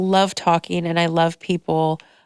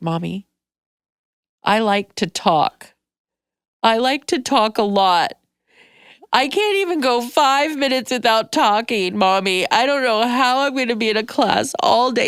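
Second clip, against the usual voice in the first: put-on high, tearful, sobbing little girl voice; 5 semitones higher than usual. Retelling a child's tearful worry about not talking in class: imitating Charlotte sobbing. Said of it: "And she's sobbing".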